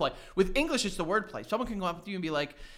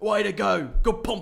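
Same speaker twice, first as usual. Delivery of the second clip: put-on Australian accent, louder; 3 semitones higher, 8 dB louder than usual. Imitating how Australians talk during sex: imitating an Australian accent. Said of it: "they sound like that all the time".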